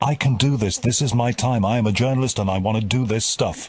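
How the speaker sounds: plain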